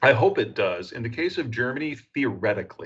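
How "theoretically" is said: theoretically stressed hard, with a falling end. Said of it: "emphasis on the word theoretically".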